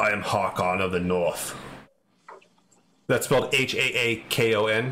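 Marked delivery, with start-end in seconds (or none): 0.0-1.5 low grumble, much lower. The narrator voices a masked figure coming forth with an axe: low muffled grumble. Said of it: "you can kind of hear it as a low grumble through his mask".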